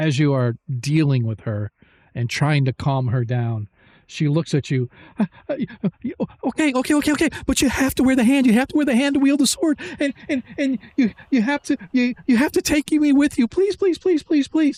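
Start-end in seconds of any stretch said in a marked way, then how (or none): 5.2-14.8 very high, rapid, frantic, stammering panicked pleading. Voicing a panicked woman begging to be taken along. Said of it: "calm down".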